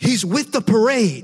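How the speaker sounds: very loud, high, shrill, drawn-out yell. Retelling how classmates stopped the cops: imitating students yelling. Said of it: "you literally yelled at them".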